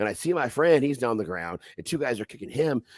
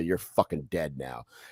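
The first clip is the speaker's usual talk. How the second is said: soft, hushed half-whisper under the breath; 8 semitones lower, 6 dB quieter than usual. Retelling a fight, quoting own words to a pinned opponent: retelling a half-whisper. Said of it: "I whisper and say".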